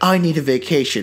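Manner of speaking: ordinary talk, nothing marked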